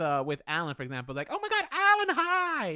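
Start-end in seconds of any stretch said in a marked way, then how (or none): 1.3-2.8 very high, loud, exaggerated squealing voice. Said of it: "he didn't say it like that".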